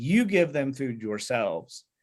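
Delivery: slow, with you and yourselves stressed. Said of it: "this contrast between themselves".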